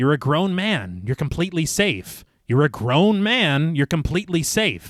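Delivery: ordinary delivery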